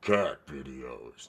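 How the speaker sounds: over-the-top, very low, deep echoing announcer voice. Pitching a video idea to viewers, saying the title in a big echoing booming voice. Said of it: "the big echoing, booming voice".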